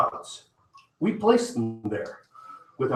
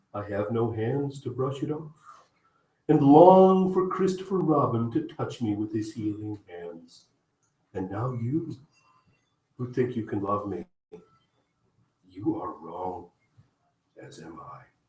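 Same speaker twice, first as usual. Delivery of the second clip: sad, gloomy donkey voice; 3 dB quieter than usual. Reading the piece Eeyore Falls in Love aloud, in a sad Eeyore voice. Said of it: "Because he talked in a sad way".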